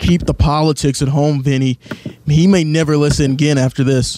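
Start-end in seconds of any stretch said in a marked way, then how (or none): none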